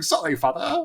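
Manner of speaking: put-on, very proper English accent. Player voicing a character apologizing to her father: proper english accent. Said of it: "a proper English accent".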